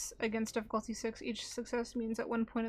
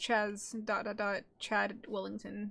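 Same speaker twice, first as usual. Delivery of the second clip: ordinary talk, nothing marked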